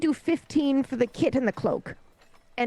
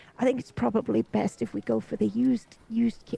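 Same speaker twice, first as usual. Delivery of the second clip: loud put-on stage whisper; 3 semitones lower than usual. In character, advising a companion so the merchant overhears: loud pretend whisper. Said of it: "but I'm pretending to whisper".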